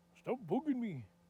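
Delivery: rough attempted Irish accent. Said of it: "my attempt. At a, at a [name] accent".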